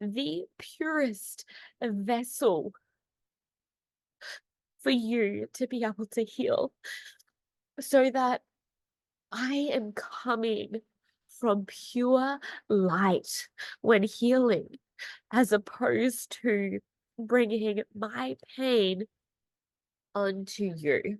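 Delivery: tearful, crying while speaking. Explaining to listeners how she heals them, while crying. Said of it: "while I'm crying and snot is coming out of".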